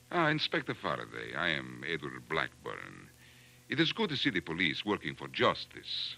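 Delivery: put-on Central European accent. Asked what the caller's accent sounds like, demonstrating it: Central European accent. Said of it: "Like this?".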